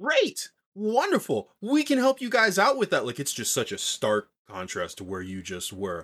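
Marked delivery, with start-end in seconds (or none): 0.0-3.1 very high, jittery, bubbly voice. Voicing an innkeeper welcoming a group of five, bubbly jitterbug. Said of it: "this bubbly jitterbug of of an anti-figure".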